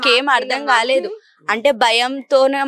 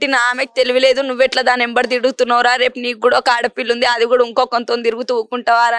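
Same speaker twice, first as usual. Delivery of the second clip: ordinary talk, nothing marked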